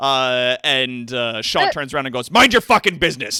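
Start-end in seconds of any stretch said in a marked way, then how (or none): 2.3-3.4 very loud, high-pitched shouting. Game master voicing Shaw, who turns and yells at a peasant: yelling. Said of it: "and like yells at him".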